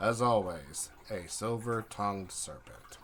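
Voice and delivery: very flat, low monotone with no inflection. Narrating a story as a character repeats his remark: very flat tone. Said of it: "And he says this in a very flat tone".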